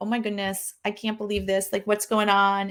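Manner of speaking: put-on nervous, panicky voice. Speaker recalls how these things used to freak them out: imitating own nervous panic. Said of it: "I would get so nervous and I'd be like".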